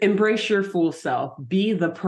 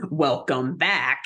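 grand, showy, very dramatic theatrical villain voice; 3 semitones lower than usual. Recounting a scene, speaker quotes the guy who captures them: imitating a very dramatic voice. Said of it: "this guy has a very dramatic voice".

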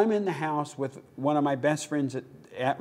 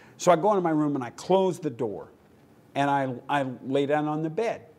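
ordinary talk, nothing marked

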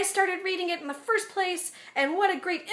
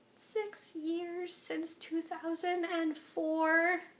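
put-on tiny kid voice, much quieter; 11 dB quieter than usual. Retelling their own nervous reply to a blog's author, imitating own tiny kid voice. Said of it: "in the worst, little kiddest, massiest voice that I have ever heard come out of me".

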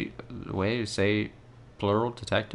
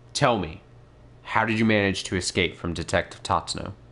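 usual speaking voice

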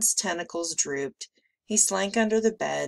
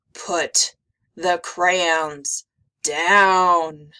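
very slow, loud growl, stretched downward; 2 semitones lower, 7 dB louder than usual. A narrator reads a monster's line to a little girl, growled. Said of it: "as he growled".

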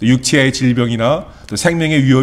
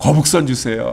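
usual speaking voice

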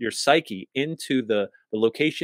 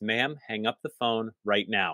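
put-on quiet, unraised voice with menace underneath; 4 dB quieter than usual. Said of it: "He didn't raise his voice".

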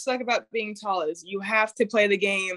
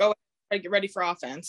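normal talking voice

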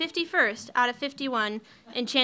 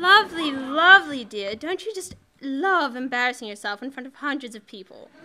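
loud, bad put-on British accent; 5 dB louder than usual. Hosts playing a game guessing an outfit's price: crappy British accent. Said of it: "we usually play this game using crappy British accents".

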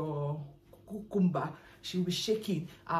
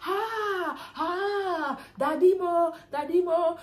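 very high, very slow, drawn-out crying screams; 11 semitones higher, 5 dB louder than usual. Describing what she does when she is with a man: imitating a woman screaming. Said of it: "she start screaming like".

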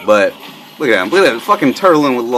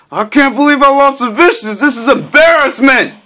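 put-on very high, furious, mad yelling; 4 dB louder than usual. Retelling how Tenez reacted after losing at Tekken Tag 2, imitating Tenez mad and yelling. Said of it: "Like mad and yelling and shit".

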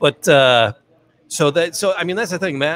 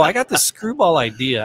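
normal talking voice

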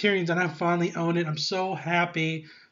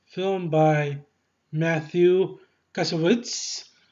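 botched, poor put-on French accent. Showing a La Haine disc to viewers, reading the credit in a poor French accent. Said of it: "That was a poor attempt at a French accent".

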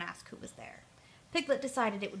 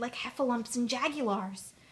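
ordinary delivery

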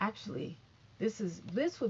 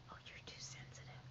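soft, breathy whisper, barely voiced. Retelling what one of them whispered after she went outside, retelling a whisper. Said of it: "I hear one of them whispering like".

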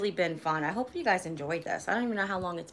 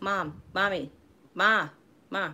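slow, nagging tone, every call drawn out. Retelling how she used to call her mother: Stewie voice. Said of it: "Like Stewie from the commercial".

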